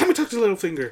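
mock pushy, angry, aggressive insistence, high-pitched. Retelling a game character's demand, imitating an aggressive woman. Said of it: "She's all aggressive and everything".

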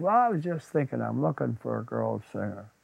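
ordinary delivery

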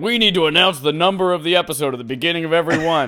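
put-on loud, high, self-important, puffed-up boasting. Teasing a co-host about last week's claim, mocking a puffed-up boast. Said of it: "all puffing your chest out saying".

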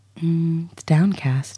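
sexy, seductive, sultry voice. Asked by a co-host to say the sponsor's name in a sexy voice. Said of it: "could you say downcast in a sexy voice?".

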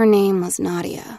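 soft, quiet murmur. Natasha answers Molly's remark, murmured. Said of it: "Natasha had murmured".

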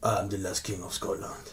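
put-on voice, low and deep, barely above a hush. Filming a ten-second video bit, doing a Forrest Whitaker impression. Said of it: "my impression of Forrest Whitaker".

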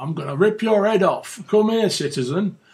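high Northern English accent, bad-guy voice. Describing the bad guys in it, the speaker imitates them in a northern english accent. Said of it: "all the bad guys in it are from the north of England. They're all talk like that".

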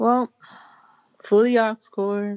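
sad, sorrowful voice. In a casual conversation, before the other speaker remarks on it, in a sad voice. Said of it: "You sounded so sad".

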